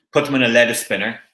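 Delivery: ordinary delivery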